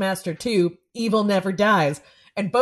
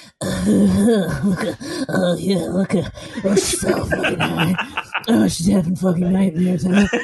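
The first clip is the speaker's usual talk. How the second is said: put-on lecherous, leering voice. Speaker describing a schlocky horror film's camera work, doing a put-on horny camera voice. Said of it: "here's my impression of an extremely horny camera".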